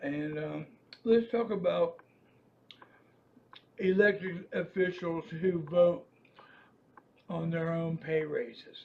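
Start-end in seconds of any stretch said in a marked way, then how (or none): 1.0-8.8 speaking with mouth full. A speaker talks while eating a sandwich he just bought. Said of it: "I'm eating a sandwich".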